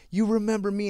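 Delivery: loud scream. Retelling a mother confronting the judge at the courthouse: imitating a mother screaming. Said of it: "Screaming, bro".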